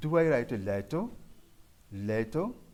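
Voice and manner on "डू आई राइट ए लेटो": questioning rising lilt climbing on "letter". Teaching question intonation with a rising tone: rising pitch on final letter. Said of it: "rising टोन ऊंचा आवाज कर ऊंची आवाज लेते हुए".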